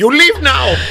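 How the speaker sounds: imitated Indian accent. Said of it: "do your best Indian accent".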